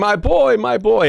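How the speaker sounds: high, desperate yelling.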